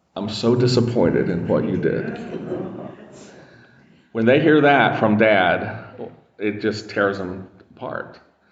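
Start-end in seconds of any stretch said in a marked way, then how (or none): 0.2-2.2 put-on, mock-composed, calm, gentle voice. A dad retells what he would say to them, in a put-on gentle, composed voice. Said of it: "in a gentle, kind of composed voice".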